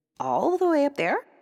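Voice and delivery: very high, hopeful tone. The princess asks the queen a second time, hoping for a different answer. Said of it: "hoping for a different answer".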